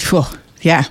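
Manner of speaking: ordinary talk, nothing marked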